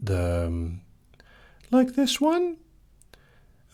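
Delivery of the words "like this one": very high fake girl voice. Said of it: "fake girl voices use".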